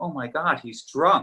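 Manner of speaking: high-pitched, exclaiming voice. Retelling a story about a woman in the front row, imitating her saying it loudly. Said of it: "she says loudly".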